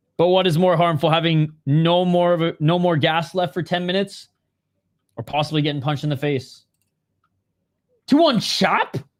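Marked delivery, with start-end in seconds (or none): 8.1-9.0 astonished, higher pitched. Reading out a scorecard result, sounding surprised. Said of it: "I don't know why I sound so surprised there".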